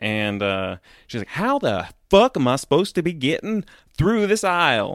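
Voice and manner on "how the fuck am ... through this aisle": mock rude, put-out old woman voice, pitched up. Retelling what an old woman pushing a cart said in a toy aisle: imitating a rude old woman. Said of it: "she said that a lot less rude".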